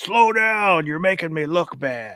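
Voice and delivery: mild yell, high and slow. Retelling what a coworker yelled at him: imitating someone yelling. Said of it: "he yelled at me one time".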